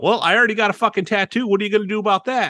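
defiant blurted-out words, very high. Retelling a reply to someone warning against a lip piercing, retelling a blurted reply. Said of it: "I just blurted out".

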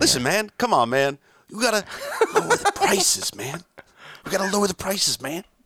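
very high, animated, swooping sing-song voice. Talking about lowering t-shirt prices: Joe Biden impression. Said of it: "I like your Joe Biden".

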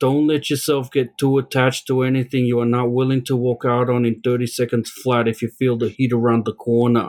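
loose, attempted New York accent. Quoting Robert De Niro's line from Heat in an attempted New York accent. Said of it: "how's that for a whatever New York accent".

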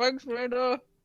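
words muffled, talking with a mouth full of food. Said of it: "Just shoving the food in my mouth like".

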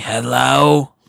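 smoker's voice, words stretched and drawn out. Recalling collections calls, the speaker does Betty answering the phone, imitating Betty the smoker. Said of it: "and she'd be like".

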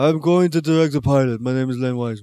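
put-on German-sounding voice. Imitating Len Wiseman announcing he'll direct the pilot: Len Wiseman impression. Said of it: "Is that how he talks?".

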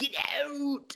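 thin, high, squeaky little voice. Retelling a church scene where a man stands up: squeaky Paul Dano voice. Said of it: "doing this kind of squeaky voice".

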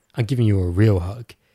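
put-on whispering. Retelling going in for a hug and speaking in her ear: retelling a whisper. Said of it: "I whisper in her ear".

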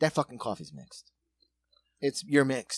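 muttering under breath. Speaker recounts a moment someone overheard them, retelling own muttering. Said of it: "I think I said it under my breath".

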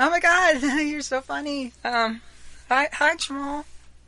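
high, anxious laughter. Voicing Megan as she turns around to greet Jamal: nervous laughing. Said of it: "turns around and nervously laughs".

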